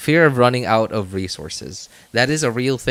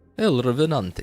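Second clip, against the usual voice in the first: attempted fake Russian accent; 3 semitones higher than usual. Trying out accents, the speaker attempts a Russian accent. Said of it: "Russian would sound be".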